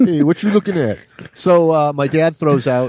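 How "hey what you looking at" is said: put-on New York accent, done for show. Joining in after another speaker mentions doing the New York thing: put-on New York accent. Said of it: "I was doing the New York thing".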